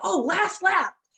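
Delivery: put-on high, loud, enthusiastic call in a kid voice.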